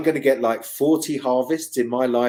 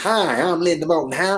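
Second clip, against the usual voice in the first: put-on American accent; 4 semitones higher than usual. Retelling a phone call to a farmer, imitating Linda Moulton Howe's American accent. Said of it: "this American accent".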